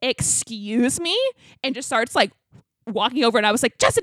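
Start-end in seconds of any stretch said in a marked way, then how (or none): 0.0-1.2 very aggressive, put-on hostile "excuse me?". Retelling how someone answered a man yelling from far away, mock very aggressive. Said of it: "you said excuse me, like, very aggressively".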